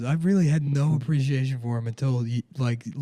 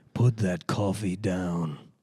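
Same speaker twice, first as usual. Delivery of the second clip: deliberately deepened, put-on low register voice; 6 semitones lower, 4 dB quieter than usual. Trying out a voice for the other speaker, in a put-on deep voice. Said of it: "So it's just deeper".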